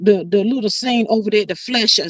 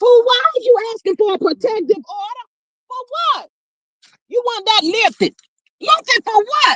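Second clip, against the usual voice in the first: very high, shrill, angry scolding shout; 11 semitones higher than usual. Ranting at someone who asked for a protective order: yelling. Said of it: "he always get me to yelling".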